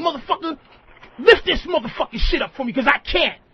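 play-acted, furious, angry woman's voice. Acting out what a woman would say to a man, mock-angry woman. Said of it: "she probably gonna do it angry like that".

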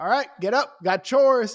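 called out loud and high. Imagining Pa Kent waking teenage Clark Kent for chores, Pa Kent voice. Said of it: "his Pa Kent, opens his windows and he goes".

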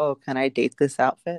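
normal talking voice

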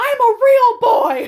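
shrill, very loud, very high, drawn-out scream. Retelling a movie scene to another speaker: imitating a boy screaming. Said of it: "when he's screaming".

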